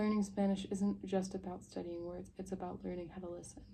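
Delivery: plain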